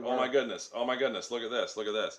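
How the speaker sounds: very loud, fast, play-acted flustered fussing. Retelling running around a record store: imitating nervous excited fussing. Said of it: "we were like nervous Nellies running around there like".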